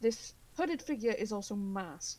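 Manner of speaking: ordinary talk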